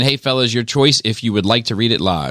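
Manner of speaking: ordinary talk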